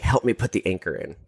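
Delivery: ordinary delivery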